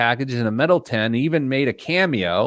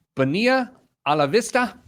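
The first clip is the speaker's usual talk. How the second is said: faked Spanish accent and pronunciation; 9 semitones higher than usual. A show host names a product on air, in a put-on Spanish accent. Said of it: "How about that accent?".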